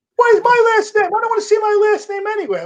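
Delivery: big man's very high-pitched, whiny voice. Retelling what Frank said, imitating Frank's high voice. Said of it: "had a high voice".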